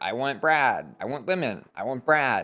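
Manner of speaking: normal talking voice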